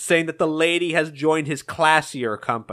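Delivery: ordinary delivery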